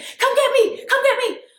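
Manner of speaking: mock shrill, very high-pitched scream. Retelling a phone call from her, imitating her screaming. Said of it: "she's screaming".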